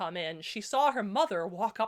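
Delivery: plain reading voice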